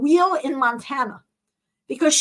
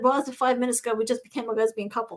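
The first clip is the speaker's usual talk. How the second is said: ordinary talk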